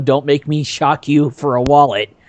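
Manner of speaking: ordinary talk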